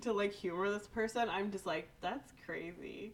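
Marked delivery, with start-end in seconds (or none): 2.0-3.1 mocking, sarcastic, quieter. Showing how to humor someone who isn't funny: sarcastic. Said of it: "That sounds so sarcastic".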